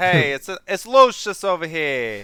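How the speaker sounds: loud, rough put-on Italian accent. Speaker tries saying a character's name in an attempted Italian accent. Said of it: "think of how to say Lucius in an Italian accent".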